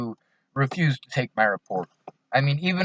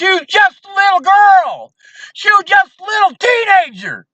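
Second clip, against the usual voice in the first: acted, very high, loud, frenzied furious screaming; 7 dB louder than usual. The speaker acts out a man screaming at him about his daughter: retelling a furious scream. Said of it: "he starts screaming".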